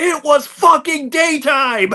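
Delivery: put-on furious, shrill, very high-pitched yell. Retelling a podcast moment where a host yells at a guest: imitating Conrad Thompson yelling. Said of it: "yells at him".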